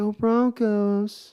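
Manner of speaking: soft, gentle cheer. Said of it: "in her soft voice".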